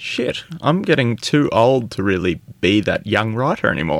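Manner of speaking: ordinary talk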